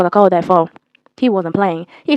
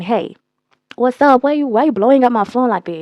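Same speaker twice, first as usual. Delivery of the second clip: usual speaking voice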